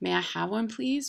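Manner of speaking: ordinary delivery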